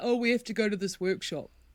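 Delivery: put-on dude voice. Quoting someone about having to go to a workshop: put-on dude voice. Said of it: "your dude voice needs some work".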